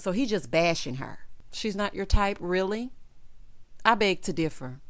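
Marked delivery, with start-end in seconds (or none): none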